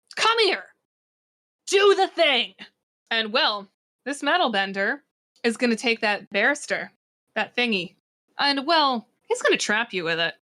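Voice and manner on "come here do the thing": loud, high-pitched shout. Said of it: "and yells".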